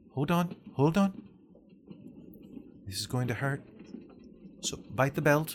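small, light-voiced halfling. Narrator reads the halfling roommate's line to the listener: light halfling voice. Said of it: "the light voice of the halfling roommate".

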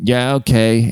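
flat, bored, unenthusiastic, zero energy. Retelling the fast food worker's reply to the order: imitating an unenthusiastic worker. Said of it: "the guy sounded very not enthusiastic".

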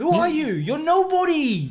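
high, loud, taunting character voice.

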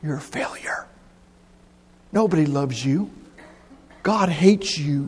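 whispered, devilish voice.

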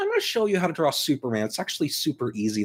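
put-on snarky sarcasm, high and swooping. Retelling a drawing tutorial: imitating sarcastic Todd McFarlane. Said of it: "really sarcastic".

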